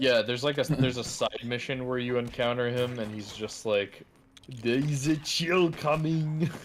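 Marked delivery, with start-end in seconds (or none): 4.5-6.5 put-on French accent, much higher pitch, slower pace. Describing a side-mission encounter in a game, bad French Arnold impression. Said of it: "Now I want like French Arnold".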